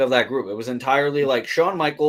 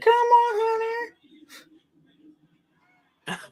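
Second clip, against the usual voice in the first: very high scream with on stretched long. Imitating Stephanie's voice during a watched match: imitating Stephanie screaming. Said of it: "Stephanie's voice there".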